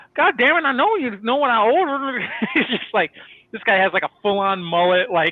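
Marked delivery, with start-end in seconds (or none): 0.2-2.2 heavy put-on Southern accent, pitched up. Retelling a guy ordering drinks from the bartender, in a thick Southern accent. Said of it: "such a sick, thick Southern accent".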